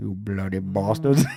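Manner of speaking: very low, soft, muttered Indian accent. After praising the other person's bit, do your own Indian Scarface voice. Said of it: "Indian Scarface".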